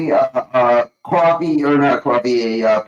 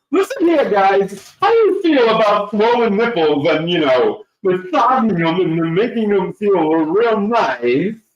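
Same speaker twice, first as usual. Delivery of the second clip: comic, high put-on voice with "nice" drawn out; 5 semitones higher than usual. Reading out a commenter's message in Jason Micasell's voice. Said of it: "Jason Micasell better".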